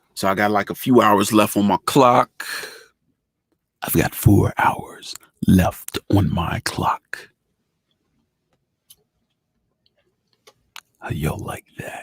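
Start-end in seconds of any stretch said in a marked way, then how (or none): 3.8-12.1 put-on radio announcer voice, slower. Speaking to y'all and showing off, radio voice. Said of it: "That's the radio voice".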